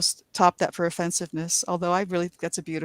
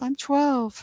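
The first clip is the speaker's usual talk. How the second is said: high-pitched, put-on girlish voice; 8 semitones higher, 3 dB louder than usual. Retelling her answer to an old man at Halloween, in girl voice. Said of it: "with my girl voice".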